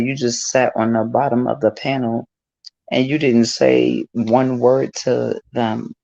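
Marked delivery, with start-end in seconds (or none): none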